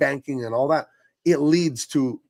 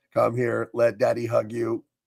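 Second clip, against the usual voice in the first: put-on fatherly robot voice, lower; 4 semitones lower than usual. Playing a dad robot comforting its child: put-on dad robot voice. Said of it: "He's a dad robot".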